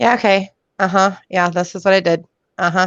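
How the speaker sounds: flat, detached, disengaged, checked-out monotone. Showing how a disengaged job candidate sounds, dissociated and uninterested. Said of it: "just kind of disassociated".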